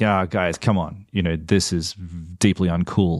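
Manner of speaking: plain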